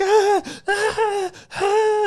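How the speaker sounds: play-acted very high, shrill, broken sobbing cries. Retelling his mother's crying every morning: imitating someone crying. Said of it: "my mom just crying like".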